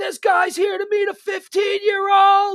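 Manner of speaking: very high, loud, shrieked screaming. Retelling how five people scream at a man walking away, mock-screaming. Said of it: "all 5 people start screaming".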